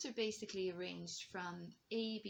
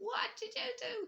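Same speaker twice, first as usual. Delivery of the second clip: sharp raised voice, very high pitch; 4 dB louder than usual. Explaining sharp notes in tuning, demonstrating a sharp raised voice. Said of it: "they're raising their voice".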